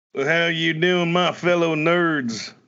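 put-on Western cowboy accent. Greeting the listeners as the cowpoke character: Western accent. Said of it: "I feel like a Western accent".

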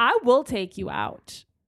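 loud, slow threatening tone. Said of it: "Monica was just like".

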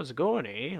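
Canadian accent with "eh". Showing how the speaker and a guest both talk: Canadian accent. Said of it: "his voice and my voice, like, we have this".

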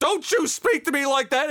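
put-on angry tone. Retelling how a child's mother reacted angrily when the child swore at her, in an angry scolding voice. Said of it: "because mom's angry and upset".

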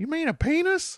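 badly done kid voice, pushed very high. Recapping a cartoon scene where Peggy talks to Bobby, doing a Bobby impression. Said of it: "That was the worst Bobby impersonation".

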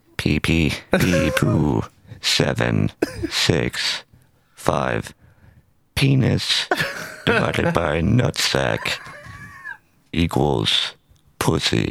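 swooping sing-song put-on voice with wide pitch swings. Fulfilling a request from a buddy, the speaker does a Stephen Hawking voice. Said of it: "to do the Stephen Hawking".

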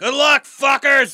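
very high, loud shout. Yelling a farewell upward to the others before leaving: yelling up at others. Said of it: "yells up".

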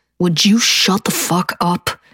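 very low, threatening, menacing growled whisper. Reading a novel aloud, one man at the bar silences his friend: very low threatening whisper. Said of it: "growls, ... in a very low, very threatening whisper".

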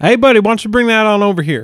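very loud, high-pitched shout. Calling out to a frightened creature on a bridge: yelling out to someone. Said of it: "You yelling out at the bullywug?".

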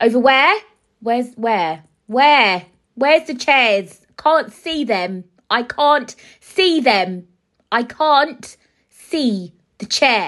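awkward, bewildered, loud, high, drawn-out shouting. Speaker retells an awkward moment being told where to sit, retelling own shouting. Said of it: "I don't know why I'm shouting".

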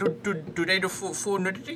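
put-on Indian accent. Speaker retelling a man's question to a friend, in a put-on indian accent. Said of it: "is that your Indian accent?".

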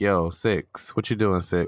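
plain

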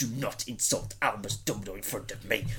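very low, deep, hushed, seething angry tone. Act out for a co-host the moment when they insult Dumbledore, in an angry Hagrid voice. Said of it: "you get that angry Hagrid".

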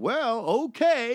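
silly, high clown voice. Retelling the speaker's reply to a mom asking for a kiss, in goofy clown voice. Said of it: "in like the goofy clown voice".

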